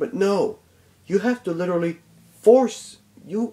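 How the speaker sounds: stuttering, stumbling over words, a bit high. Complaining about a game forcing side missions, stuttering. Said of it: "sorry for my stuttering".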